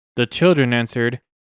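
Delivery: ordinary delivery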